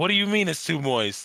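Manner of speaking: very high, shrill, loud, furious outburst. Retelling a man in a kitchen turning angrily to the crew; mock-angry outburst. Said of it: "he just starts getting angry and angry".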